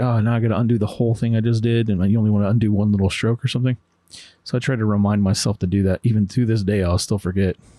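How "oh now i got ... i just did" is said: usual speaking voice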